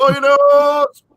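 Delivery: very high-pitched shout with rising pitch. Imitating how an actor repeats everything: Donald Sutherland shouting. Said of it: "in a shout".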